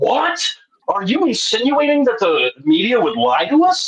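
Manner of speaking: play-acted enraged outburst, very high, swooping. Retelling a boss's reaction to a remark at work: imitating an angry boss. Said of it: "my boss got so angry at me, like, demonically angry".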